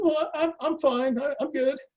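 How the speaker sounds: very high, squeaky, stressed voice. [name] recounting answering Cyril right after a shock, retelling his squeaky reply. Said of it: "squeaky voice".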